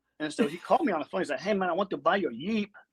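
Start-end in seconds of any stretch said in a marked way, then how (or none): 1.4-2.7 put-on Spanish accent.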